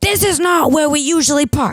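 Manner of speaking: very high, shrill, exasperated, frustrated mock yelling. Retelling what a woman yelled at the speaker in a car, retelling her yelling. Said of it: "She's yelling at me".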